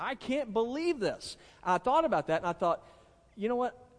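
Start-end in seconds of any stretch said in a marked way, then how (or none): 0.0-1.4 long high-pitched yelling. Describing becoming like their grandmother, acting out yelling at the TV. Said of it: "I'm like yelling at the television".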